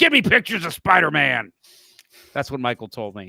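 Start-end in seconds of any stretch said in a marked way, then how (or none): 0.0-1.5 gruff newspaper-boss character voice. Retelling what an editor said, in a J. Jonah Jameson voice. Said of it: "I have him sound like J. Jonah Jameson from Spider-Man".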